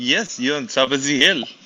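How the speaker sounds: put-on French accent, friendly tone. Imitating how another speaker just said a line: imitating Nico's French accent. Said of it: "in his, uh, French accent".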